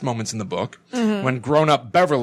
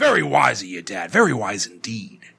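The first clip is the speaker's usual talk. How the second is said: creepy movie clown voice; 3 semitones lower than usual. Retelling the clown's reply to Georgie in the book: Tim Curry Pennywise voice. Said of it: "I like the Tim Curry Pennywise voice".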